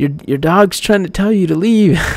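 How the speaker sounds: acted mild half-yell. Retelling a moment of warning a dog owner: retelling own scream. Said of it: "I was screaming at him".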